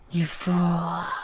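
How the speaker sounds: hissing, "fool" long and lingering. In a story, she hisses at you in the dark; hissing. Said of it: "she hisses out".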